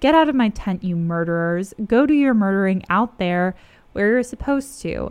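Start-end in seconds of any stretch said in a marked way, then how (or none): none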